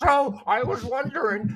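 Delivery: put-on high, slow, squeaky six-year-old voice.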